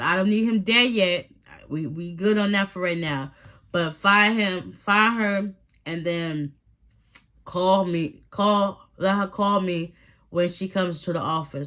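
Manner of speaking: ordinary talk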